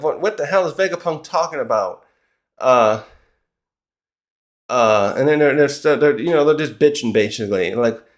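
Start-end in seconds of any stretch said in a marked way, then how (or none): none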